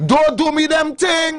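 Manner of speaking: put-on slow Jamaican accent, words stretched out. Imitating a man scolding someone for calling late: jamaican impression of him. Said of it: "you have his impression down".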